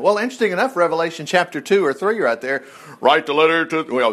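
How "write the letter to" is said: deep voice, much slower. Preaching on Revelation, the speaker quotes the command in a deep voice like God talking. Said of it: "deep voice, like God talking".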